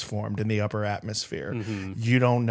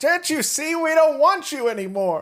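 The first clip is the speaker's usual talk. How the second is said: play-acted shrill, very high, full-on scream; 3 dB louder than usual. Acting out an imagined movie scene yelling at someone at the woods' edge: imitating screaming.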